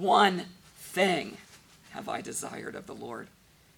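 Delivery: heavy stress placed on the words "one thing". Reading a scripture verse aloud, emphasis on one thing. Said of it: "my emphasis is on the first two words".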